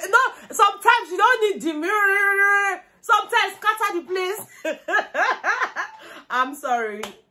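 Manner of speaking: high voice breaking into laughter. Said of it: "Better stop laughing now".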